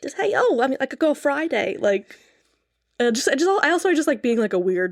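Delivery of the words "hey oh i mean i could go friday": put-on, old-timey, nineteen-twenties secretary voice. Showing a favorite role to play: 1920s stenographer voice. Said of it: "a nineteen twenties stenographer".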